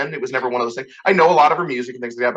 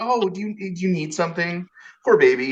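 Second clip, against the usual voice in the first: acted-out coddling baby talk, pitying tone; 6 semitones higher than usual. Retelling how a counselor answers rude men: imitating a counselor's mock pity. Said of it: "she treats me like a baby".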